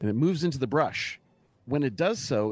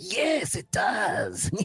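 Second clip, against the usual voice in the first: gleeful, high, swooping goblin cackle; 7 semitones higher than usual. Narrating a fight, the speaker voices a goblin after it slices a hero: cackling goblin voice. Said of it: "It cackles with glee and licks the blade and says".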